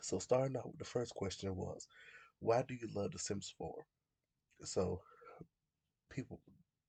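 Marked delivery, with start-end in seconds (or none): none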